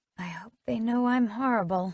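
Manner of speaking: soft half-whispered voice. Reading a story aloud, a character confides to Jack: half-whispering. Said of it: "I whisper to Jack".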